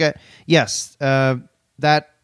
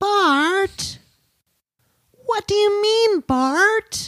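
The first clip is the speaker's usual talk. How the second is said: very high little-girl cartoon voice, one word stretched out. Offering a best attempt at a cartoon impression, doing a Lisa Simpson impression. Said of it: "my best Lisa Simpson impression".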